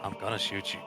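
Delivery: hushed, muttered whisper under the breath. Voicing a character answering a plea not to shoot: muttered under his breath. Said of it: "Just under his breath".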